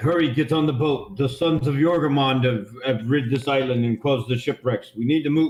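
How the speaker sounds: ordinary delivery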